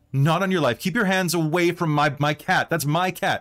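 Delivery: high pushy barging-in voice. Voicing Karen pushing past a man to claim a cat: voicing Karen pushing past. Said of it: "just push past and be like".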